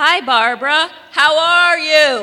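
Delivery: very loud shouting, slow and drawn-out. In a skit, Kate greets Barbara, who is blind: yelling. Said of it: "but why are you yelling?".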